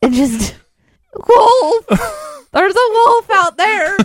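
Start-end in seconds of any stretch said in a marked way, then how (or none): 1.1-4.0 put-on, higher-pitched puppet-like voice. Speaker acts out Aaron crying wolf as if he were a Muppet, Aaron as a Muppet voice. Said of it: "imagine Aaron as some sort of Muppet or puppet".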